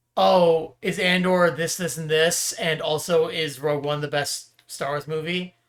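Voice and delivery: ordinary talk, nothing marked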